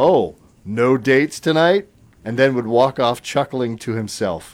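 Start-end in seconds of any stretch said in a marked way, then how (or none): 0.0-1.9 play-acted, loud, dripping, heavily sarcastic tone. Reading a story about a dad checking on his son's game night, dripping with sarcasm. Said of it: "in a voice dripping with sarcasm".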